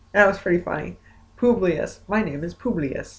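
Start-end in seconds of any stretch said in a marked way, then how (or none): 1.4-3.2 blunt, flat delivery with a word repeated twice. Retelling a man who talked about living on the moon, imitating Publius's monotone. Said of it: "he was like talking like monotone".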